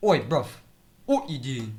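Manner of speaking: casual, everyday, street British accent. Showing how British people actually talk, in a casual British accent. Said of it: "now I just do it like how they actually say it".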